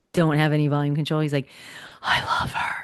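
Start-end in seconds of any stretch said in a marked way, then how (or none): 2.0-2.8 put-on loud, carrying stage whisper in a little kid's voice. Retelling a little nephew's remark about a waitress: imitating a child's stage whisper. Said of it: "that stage whisper that little kids".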